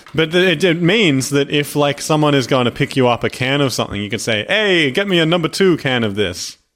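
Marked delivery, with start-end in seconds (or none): 4.4-6.5 put-on New York accent. Explaining how to ask someone for a can of something; put-on New York accent. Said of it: "Is that a Jamaican accent?".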